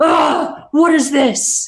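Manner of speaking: loud, angry outburst, barked out as a grunt.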